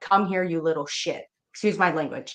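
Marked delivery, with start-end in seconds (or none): 0.0-1.2 put-on demonic voice. Retelling a voice heard in the middle of the night: imitating a demonic voice. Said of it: "such a demonic voice that said".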